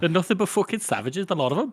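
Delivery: put-on strong Newcastle accent, pitched way up high. Asked to go ahead, performing Jallenhorn's Newcastle accent for anyone interested. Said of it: "Newcastle accent for anybody who's interested".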